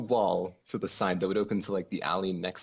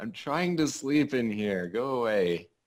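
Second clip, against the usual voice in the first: calling out slowly, drawn-out voice; 3 semitones higher than usual. Playing a character who yells out at people below: yelling out. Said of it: "I'm gonna yell out".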